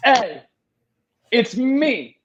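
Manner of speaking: shrill, sassy, pitched way up, very high and loud. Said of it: "We got sassy Jesus".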